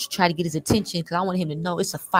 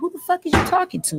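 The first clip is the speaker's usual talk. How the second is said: acted-out angry tone, pitched very high; 12 semitones higher than usual. Retelling what a man said when he came out of your house, imitating an angry man. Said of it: "S K was mad".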